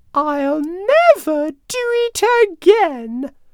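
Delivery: tiny, very high, slow relieved squeak. The narrator reads the little mouse answering King Lion after being let go: relieved squeak. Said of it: "the little mouse squeaked, relieved".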